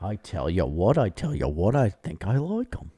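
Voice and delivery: put-on Cockney accent, chimney-sweep style.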